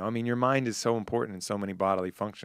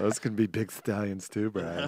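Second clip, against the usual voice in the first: put-on camp voice.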